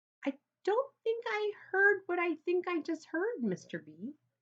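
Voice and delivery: squeaky, high, astonished voice. Reading a story aloud, voicing a character's first words: squeaky amazed voice. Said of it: "in a squeaky, amazed kind of voice".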